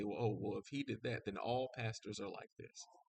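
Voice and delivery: ordinary talk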